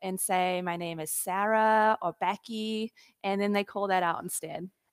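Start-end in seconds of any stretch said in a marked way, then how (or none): 0.6-2.9 slow, slight, put-on Canadian accent. Retelling giving a name at Starbucks: fake Canadian accent. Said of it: "my fake little Canadian accent".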